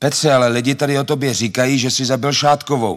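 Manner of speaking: high-pitched yell. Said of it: "matka na mě začala křičet".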